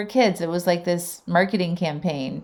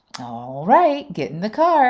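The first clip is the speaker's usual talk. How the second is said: funny, swooping, sing-song pronunciation of "all right"; 3 semitones higher than usual. Retelling how the dad says his morning phrase: imitating Peter's funny pronunciation. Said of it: "but the way he says it".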